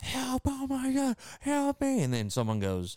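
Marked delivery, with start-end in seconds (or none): 0.0-2.0 shrill, high, very slow, drawn-out screaming. Describing skinwalker videos, imitating someone screaming for help in the woods. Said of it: "and someone's screaming".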